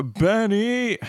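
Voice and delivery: high-pitched, carrying call.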